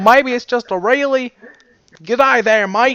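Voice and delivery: southern drawl blended with Australian. Switching between accents, the speaker tries a Southern-Australian accent mix. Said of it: "Southern and Australian. So it's like kind of like this".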